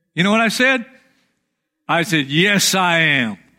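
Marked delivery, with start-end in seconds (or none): 2.3-3.4 dry, sarcastic tone. Retelling a sarcastic answer to a friend's question: retelling a sarcastic reply. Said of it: "I was being sarcastic".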